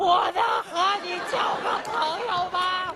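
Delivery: play-acted high, slow yell so hard voice breaks. Retelling asking a girl to be friends after she asks again: retelling a shout, voice cracking. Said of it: "嗓子都劈了".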